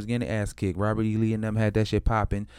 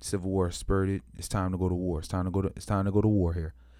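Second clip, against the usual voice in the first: usual speaking voice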